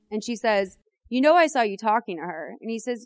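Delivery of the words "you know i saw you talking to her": ordinary delivery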